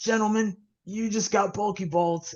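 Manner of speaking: high, furry cartoon puppet-monster voice. Retelling a man's remark to the gentlemen, in his Cookie Monster voice. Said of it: "in his Cookie Monster like voice".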